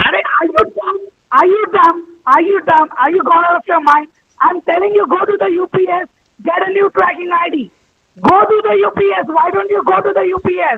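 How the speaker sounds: shouting. Speaker arguing with another person, who tells them they're shouting; shouting. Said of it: "You're shouting".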